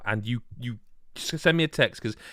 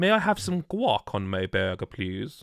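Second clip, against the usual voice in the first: put-on, posh, upper-class accent with posh diction. Showing how ordering would sound saying guac: put-on upper class accent. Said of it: "that's more upper class".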